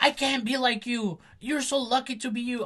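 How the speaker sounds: very high, loud, shrieking tantrum outburst. Retelling a scene where Isabella York yells at Violet: Isabella York throwing a tantrum. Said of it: "she has a tantrum with Miss Violet because she's like".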